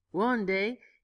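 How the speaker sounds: ordinary delivery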